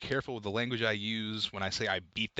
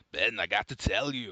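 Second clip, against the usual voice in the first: put-on ogre voice. Imitating Shrek telling someone something: Shrek voice. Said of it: "That's my Shrek".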